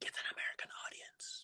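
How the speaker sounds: very soft, voiceless whisper. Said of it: "I always heard a whisper in my ear saying".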